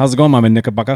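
very fast, rushed delivery. Greeting another speaker by a nickname, saying it really fast. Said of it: "I had to say it really fast".

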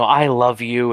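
put-on sweet nurse voice. Retelling a character calming down suddenly: Annie's sweet nurse voice. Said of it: "her nice, sweet nurse voice".

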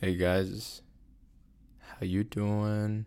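almost half-whispering, hushed, very slow. Host greeting listeners at the start of an episode, almost half-whispering. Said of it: "I feel like I'm whispering".

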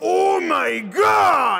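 put-on shrill, very high, loud Japanese-accented shout, drawn-out God. Imitating old Joseph from JoJo's Part Three: Japanese-accented English. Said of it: "when you hear old Joseph saying".

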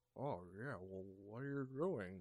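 hesitant, unsure, mumbled delivery. Imitating the dub voice given to an actor: imitating a mumbly unconfident voice. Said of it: "a mumbly, not too confident in his words".

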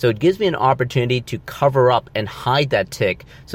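ordinary talk, nothing marked

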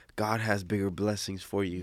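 usual speaking voice

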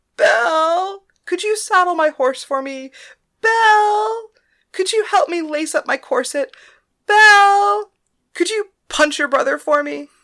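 shrill falsetto, very high and loud. A narrator reads a character teasing a girl about her name, in falsetto. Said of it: "Simon continued in falsetto".

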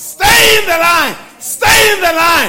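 very loud, high, urgent shouted scream. Speaker recounts a vision of people going off the line, retelling a scream. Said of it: "I screamed at the top of my voice".

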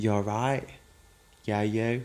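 put-on Essex accent. Reenacting messages so the other speaker can guess who sent them, in The Only Way Is Essex voice. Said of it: "I'm trying to sound like someone from The Only Way Is Essex".

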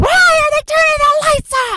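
very high, shrill scream laced with venom. Speaker retelling a woman on a night flight screaming at everyone: retelling a venomous scream. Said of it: "and she screams".

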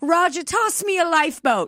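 upper-crust accent, acted. Retelling how a scared woman on a rich boat talked, in a different accent. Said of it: "started speaking in this different accent".

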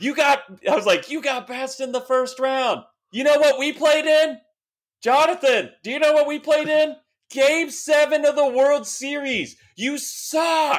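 mock, shrill, very high screaming heckle. Fan retells screaming at a player on the on-deck circle from the stands, retelling a scream. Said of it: "I was screaming at him".

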